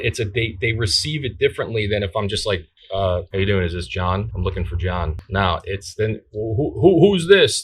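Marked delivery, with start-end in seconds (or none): 3.3-5.2 weak, lifeless, quiet, flat, rushed monotone. A caller demonstrates the weak way to greet a customer on the phone: quiet monotone. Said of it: "If you're quiet and you're you're very monotone".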